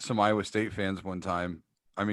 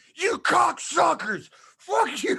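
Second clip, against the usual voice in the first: put-on very high, loud shrieking outburst; 6 dB louder than usual. Recalling screaming at the refs in public, retelling a scream. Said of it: "I'm screaming at the top of my lungs".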